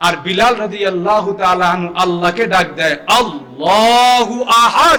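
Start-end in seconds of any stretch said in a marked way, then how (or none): 3.1-5.0 slow, drawn-out call, stretched out slowly. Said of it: "তুই যে এত জোরে আল্লাহরে ডাকোস".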